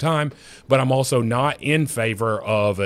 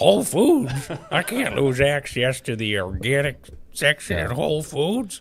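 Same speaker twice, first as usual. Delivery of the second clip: put-on elderly old man voice; 4 semitones higher than usual. Replaying a line from a parody he performed, in an old man voice. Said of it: "I have to work on my old man voice".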